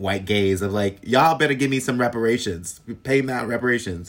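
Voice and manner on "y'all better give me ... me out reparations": brash, mild heckling call-out. Retelling what was yelled at the crowd while hosting: imitating own past yelling. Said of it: "I used to yell at".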